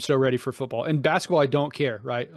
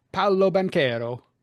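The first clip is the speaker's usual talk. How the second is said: put-on Italian accent, pitched up; 6 semitones higher than usual. Reading out a list of player names, the speaker says this one in an italian accent. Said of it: "Even even the Italian accent".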